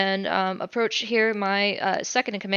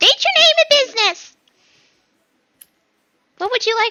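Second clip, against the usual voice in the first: very high, very loud, squeaky gnome voice; 9 dB louder than usual. Game master voices a female gnome questioning a player, in a squeaky female gnome voice. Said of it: "you hear a squeak of a, a voice as the female gnome says".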